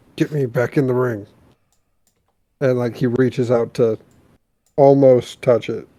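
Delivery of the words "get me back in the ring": soft, hushed stage whisper. Describing a wrestling scene, the speaker quotes a man's plea to the ref; half-whispering a quoted plea. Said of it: "he kind of just whispers to the ref".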